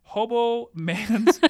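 laughing through the words. Reading an episode synopsis aloud to the other speaker, laughing while reading. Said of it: "You can't even say it without laughing".

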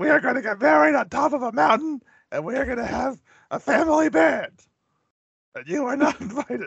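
very high-pitched, defensive outburst. Retelling an Anchorman intervention scene, mock-defensive Will Ferrell impression. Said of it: "he's getting all defensive about Veronica".

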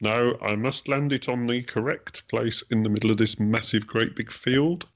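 high, sad, put-on nerdy science-geek voice. Mocking a geek who insists on landing in the right place: put-on sad geeky science voice. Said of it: "That's just my, um, sad, geeky science voice".

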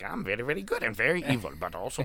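swooping, all-over-the-place voice, pitch leaping everywhere. Retelling trying to do an impression on the way home: Danhausen impression. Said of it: "trying to do, like, an impression".

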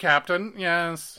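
stilted, broken, halting alien voice, high and loud. Podcaster discussing an episode, imitating how an alien race is supposed to talk. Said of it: "They're supposed to speak like this".

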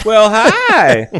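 very high, loud, put-on southern lady voice. Describing a talking cat video, voicing the cat like a southern lady: southern lady voice. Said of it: "It sounds like a southern lady going".

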